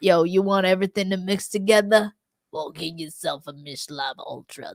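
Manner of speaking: put-on New York accent, beer-ad style. Recording a joke clip to submit as the brand's spokesperson, in a New York accent. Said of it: "held the New York accent for like two seconds".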